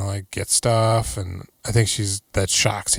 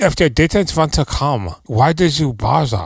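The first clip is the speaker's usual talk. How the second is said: put-on German accent, loud, slow and deliberately drawn out; 5 semitones higher, 5 dB louder than usual. Retelling a movie scene, voicing the husband: put-on German accent. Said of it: "it's German".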